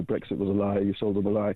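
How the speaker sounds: ordinary talk, nothing marked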